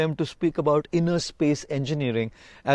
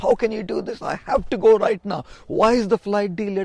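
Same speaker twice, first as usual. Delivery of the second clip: outraged, furious, abusive yelling; 4 semitones higher than usual. Retelling a woman at the airport gate yelling at ground staff, imitating angry yelling. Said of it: "started yelling and shouting abuses".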